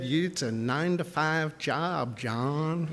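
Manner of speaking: put-on slow, drawling Southern US accent. Recalling a job promise from the then CFO, the speaker quotes him: Jeff Long's southern drawl. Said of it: "in a southern drawl".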